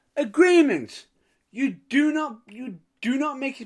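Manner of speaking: high, loud mock indignant outrage.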